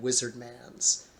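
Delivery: ordinary delivery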